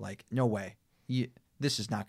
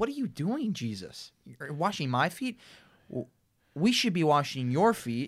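utterly aghast, appalled, shocked disbelief; 5 semitones higher than usual. Demonstrating the inflection for a scene where someone's feet are being washed: appalled. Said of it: "Like just appalled".

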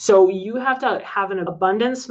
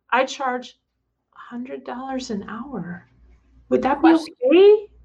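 put-on timid, small, higher little girl voice; 5 semitones higher than usual. Demonstrating an unconfident way of quoting a price; timid little girl voice. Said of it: "And then the little girl voice".

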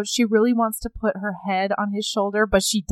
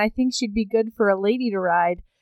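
ordinary talk, nothing marked

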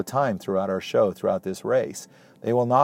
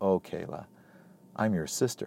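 breathy, honeyed, sugary, soft, sweet acted tone; 3 semitones lower, 9 dB quieter than usual. Retelling what a woman said to kayla, retelling a very sweet voice. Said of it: "in the most sweet voice".

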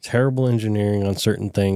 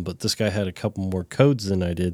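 ordinary talk

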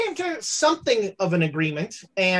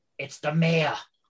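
muttered quietly, lower pitch; 4 semitones lower than usual. Voicing a bartender warning others as someone enters: under his breath. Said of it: "under his breath goes".

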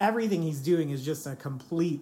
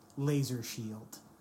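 mock-deadpan, lower and quieter; 4 semitones lower, 5 dB quieter than usual. Describing a show scene, acting out a character's imaginary laser shield, deadpan. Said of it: "he just deadpans".

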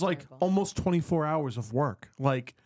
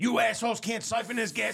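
mock huffing yell, fast and high-pitched; 7 semitones higher than usual. Retelling how he came over yelling at the crew about siphoning gas, imitating yelling. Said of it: "yelling at us".

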